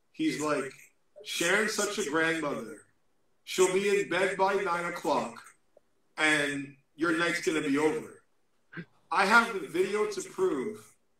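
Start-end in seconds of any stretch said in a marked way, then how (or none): none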